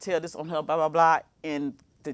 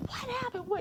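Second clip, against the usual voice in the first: put-on screaming and hollering, pitched very high; 10 dB quieter than usual. Retelling the moment her trainer arrived: retelling her own screaming. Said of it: "I'm screaming and hollering".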